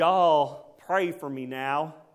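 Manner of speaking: put-on Southern American accent, very slow, loud drawl. Retelling what the boy said: southern accent. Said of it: "do my best southern accent".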